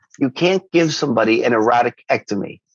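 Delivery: ordinary delivery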